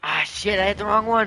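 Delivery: panicking voice. Hitting the wrong button while fleeing in a game: panicking. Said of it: "I'm panicking".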